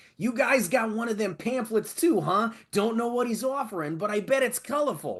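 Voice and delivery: very high put-on cartoon character voice. Reading to himself while doing a Rizzo voice. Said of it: "I'm doing my Rizzo voice".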